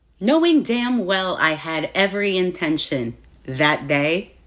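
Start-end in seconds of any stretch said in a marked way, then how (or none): none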